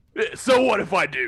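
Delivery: two-pack-a-day smoker voice. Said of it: "You sound like you smoke, like, two packs a day".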